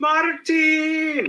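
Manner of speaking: very high, drawn-out yell. Showing how to say a name, yelling it: Gabriel Iglesias yelling Martin. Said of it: "I say it like, uh, Gabriel Iglesias".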